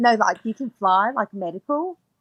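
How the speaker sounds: put-on New Zealand accent. Speaker retelling what a woman asked her, new zealand accent. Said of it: "Kiwi accent, like New Zealand".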